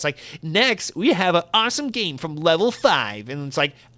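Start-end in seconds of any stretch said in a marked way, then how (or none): 0.4-3.3 sterile, pre-recorded little robot announcer voice. Mocking stale pre-recorded game presentations, imitating the Nintendo robot voiceover. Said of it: "there's like some little robot voiceover".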